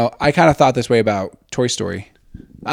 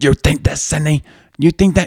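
a yell reined in, oddly contained; 4 semitones higher than usual. Showing the others how he sounds in the scary movie: imitating a quiet yell. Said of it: "He like yells, but like quietly".

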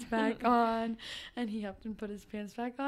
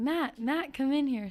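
mock shouting, loudly yelled; 3 semitones higher, 4 dB louder than usual. Telling how your grandpa called your uncle in, imitating him yelling the name. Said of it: "he started yelling my uncle's name".

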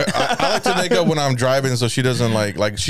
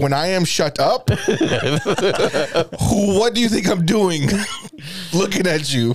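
put-on angry broken English, higher; 7 semitones higher than usual. Retelling how he talks to his girl when angry: imitating own angry English. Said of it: "Like, angry English".

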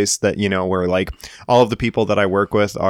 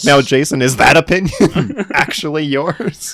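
slow, higher, probing, needling teasing voice; 6 semitones higher, 4 dB louder than usual. Imagining a joke made about the speaker: imitating Jeff teasing. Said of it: "he's gonna be like".

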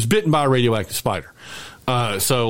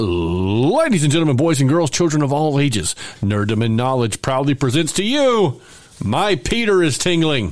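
bad, showy ring-announcer voice; 3 semitones higher than usual. Show host introducing the main event, in a terrible announcer impersonation. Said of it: "I know it's a terrible impersonation".

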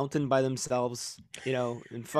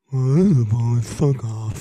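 sad goat voice, much louder; 3 semitones lower, 6 dB louder than usual. Asked for an impression of the sad goat, doing a sad goat voice. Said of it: "What's your impression of the sad goat?".

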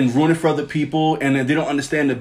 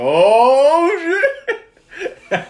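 put-on very high, stretched-out, swooping freak-out; 13 semitones higher, 5 dB louder than usual. Retelling the moment the hammer started shaking as Cap lifted it, retelling freaking out. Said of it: "I was freaking out".

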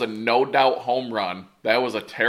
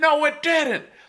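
mock heated back-and-forth yelling, pitched high. Retelling arguing with the umpire over a ball under the fence, re-enacting yelling. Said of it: "i'm yelling in exchange back and forth with the umpire".

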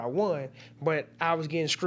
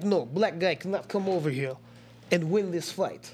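put-on Russian-accented voice. A fighter quoting what people will say about his fight, russian accent. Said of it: "That was a nice Russian accent right there".

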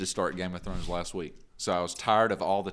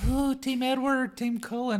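very high, shrill, starstruck gushing squeal. Mocking older fans of the Twilight movies: imitating excited cougar moms. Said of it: "got all excited about when the Twilight movies came".

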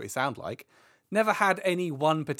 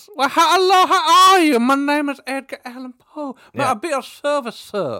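put-on very loud, very high, belted Southern accent; 11 semitones higher, 9 dB louder than usual. Describing an actor's role in a movie, speaker does an Edgar Allan Poe movie impression. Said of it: "talks like this".

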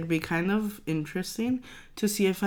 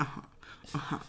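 mock bored uh-huh, lower and quieter; 4 semitones lower, 12 dB quieter than usual. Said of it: "He's like".

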